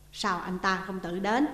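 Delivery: plain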